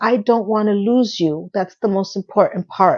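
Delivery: plain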